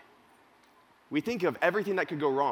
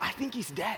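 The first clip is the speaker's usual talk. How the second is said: higher relieved tone. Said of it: "in an offensively relieved tone of voice".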